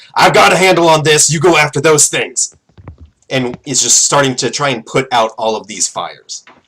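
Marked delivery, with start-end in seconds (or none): 0.2-2.6 loud, yelled shouting. Voicing a stranger fighting fires, calling over his shoulder: yelling. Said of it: "just yells".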